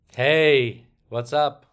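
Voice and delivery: loud, casual, put-on American accent. Greeting the podcast host in a put-on American accent. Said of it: "Good accent".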